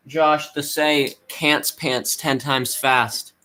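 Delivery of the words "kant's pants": plain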